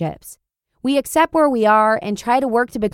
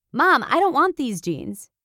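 mock yelling, calling out loudly; 4 semitones higher than usual. Acting out what a son yells about his jeans: imitating Josiah yelling. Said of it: "Josiah yells".

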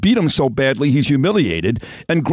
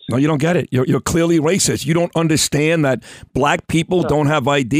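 ordinary talk, nothing marked

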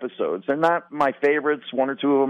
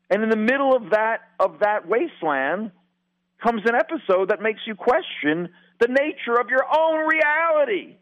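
raised, pitched-up voice, lifted for effect; 8 semitones higher than usual. Speaker describes a Twilight Zone episode to the other hosts, raised voice. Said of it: "You like how I raised my voice?".

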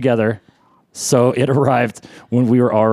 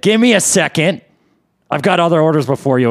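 put-on rude manner, higher pitched; 6 semitones higher than usual. Retelling how the bartender answered when they waved politely; imitating a rude bartender. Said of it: "he rudely said".

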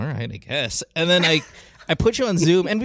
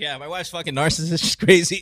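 mock breezy, casual, matter-of-fact, offhand tone. Teasing another speaker about complaining openly at midnight: imitating someone casual. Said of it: "you're so casual".

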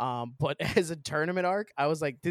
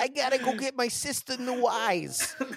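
exaggerated, high, over-the-top Brooklyn accent; 9 semitones higher than usual. Friends mock a cartoon's English dub, quoting a character, exaggerated Brooklyn accent. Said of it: "they do like a Brooklyn accent".

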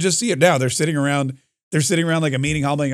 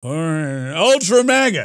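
put-on elderly politician voice. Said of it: "That's my Joe Biden impression".

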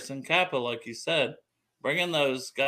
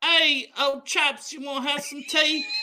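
very high, loud, put-on fake British accent; 14 semitones higher, 5 dB louder than usual. Imitating a British American player in a comedic bit: put-on British accent. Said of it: "you got a British accent?".

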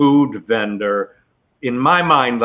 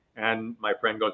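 ordinary talk

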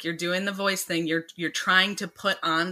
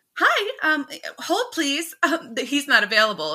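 overdone put-on secretary voice, high and sing-song; 9 semitones higher, 5 dB louder than usual. Showing how they first played a scene, in a put-on secretary voice. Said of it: "i was kind of doing the secretary like".

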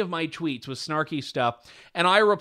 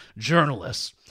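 sarcastic, mocking air-quotes tone; 4 semitones lower than usual. Speaking against True North Media, scare-quotes sarcasm on "journalists". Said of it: "I had to do the scare quotes voice".

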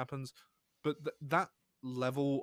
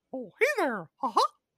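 loud, squeaked-out voice; 13 semitones higher, 8 dB louder than usual. Copying characters seen on TV, doing a Mickey Mouse voice. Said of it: "say it was, like, Mickey Mouse, and just be like".

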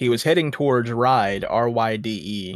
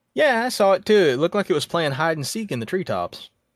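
dry, mock-agreeing sarcasm, sing-song and pitched up; 7 semitones higher than usual. Speaker imagining a friend's reply to a UFO story, mock-sarcastic friend. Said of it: "his friend just sarcastically like".

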